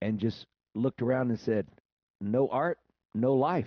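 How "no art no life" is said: weighty, slow, deliberate dramatic delivery after a pause. Retelling how a man answered a question, imitating Morgan going quiet with a dramatic pause. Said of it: "he got real quiet with his dramatic pause".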